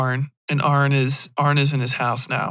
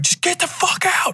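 out-of-control, very high-pitched freaking out. Voicing a man yelling at his girlfriend to leave: character freaking out. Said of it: "he's starting to freak out".

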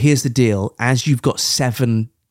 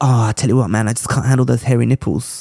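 put-on rude boy accent, more American. Retelling how someone quit, doing a Lewis impression. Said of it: "that's not a bad Lewis".

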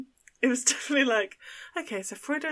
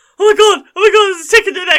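put-on frantic panic, very loud, high, rapid; 8 semitones higher, 15 dB louder than usual. Retelling the moment a dad found a tick: imitating a panicked dad. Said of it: "there was this mad panic".

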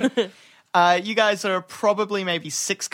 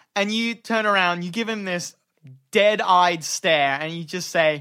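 ordinary talk, nothing marked

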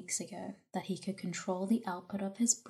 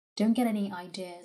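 raised volume; 6 dB louder than usual. Turning serious after a chuckle, he gives a warning. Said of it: "he warned".

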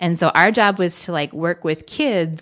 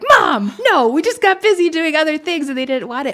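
aghast, appalled, high, raised horrified voice; 10 semitones higher, 5 dB louder than usual. Retelling a horrified answer to a mother's question: retelling own horrified reply. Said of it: "I was horrified".

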